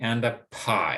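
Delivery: pitch falls at the end of pie. The last item of a spoken list: falling intonation on pie. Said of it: "and then dropping".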